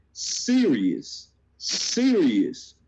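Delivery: the word "serious" strongly emphasized. Explaining what a scout is really about: stress on serious. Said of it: "I'ma stress this".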